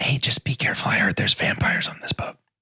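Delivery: whispered put-on character voice. In a story game, Fiddlesticks speaks to Captain Vance on the gangplank, whispering. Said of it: "whispers to Captain Vance".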